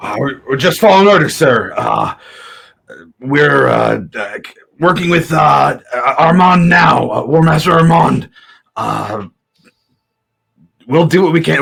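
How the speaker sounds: flustered, unsure, faltering. Voicing a guard answering questions about his orders: flustered guard. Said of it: "he just gets flustered".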